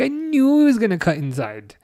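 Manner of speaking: put-on Welsh accent slipping in. Repeating own reaction to Gakpo cutting inside: Welsh accent. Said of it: "I don't know why I'm sounding Welsh".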